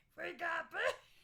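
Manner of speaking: loud, high growl with fried, gravelly voice. Trying to copy a woman's vocal fry and ending up growling instead. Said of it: "I end up growling".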